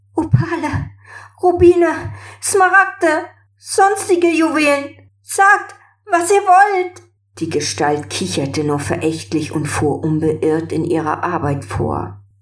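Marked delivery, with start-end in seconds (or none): 0.2-7.0 very high, frightened, teary, fearful, tearful voice. A princess pleading with a scornful figure, fearful and tearful. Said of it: "als sie angsterfüllt fortfuhr".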